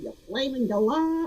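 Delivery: bad put-on Australian accent, a bit high. Quoting a phrase from Home and Away in a bad Australian accent, imitating Alf Stewart. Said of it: "just heard me try to do that accent".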